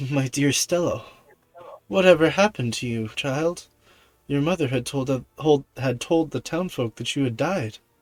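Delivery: tender, calming, gentle fatherly tone. A shocked father speaks to his daughter Stella, thought dead: soothing, gentle voice. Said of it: "in a as as soothing and gentle voice as he can".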